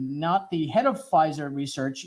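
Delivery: plain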